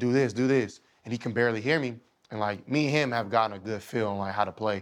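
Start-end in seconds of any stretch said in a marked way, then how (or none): 0.0-0.8 loud, raised, carrying shouted call. Retelling a play, repeating what was yelled to a teammate: imitating own past yelling. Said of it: "I'm yelling him".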